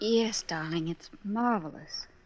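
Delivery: level, flat, unenthused, unexcited tone. A woman replies to a man who says he won't be blind, not very excited. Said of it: "You don't sound very excited".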